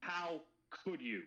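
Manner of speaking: light, moderate yell held near talking level. Voicing a character after a crossbow shot in camp: screaming at the top of lungs. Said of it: "I scream at the top of my lungs".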